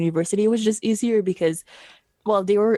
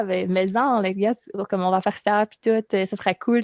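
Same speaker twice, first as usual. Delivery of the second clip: Québécois French accent. Recounting switching to Québécois mid-conversation, speaking with a Québécois French accent. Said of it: "I switched to the Québécois".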